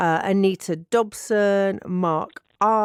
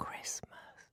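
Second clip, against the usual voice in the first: whispered, very quiet, barely audible. Saying aloud the word the talk calls the C word: said very quietly. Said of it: "I'm gonna say it very quietly".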